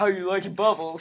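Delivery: low, deep, easygoing, mellow voice. Imagining a face rising from a hot tub and speaking: deep mellow voice. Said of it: "a really deep mellow voice was like".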